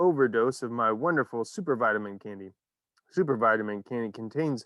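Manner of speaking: ordinary delivery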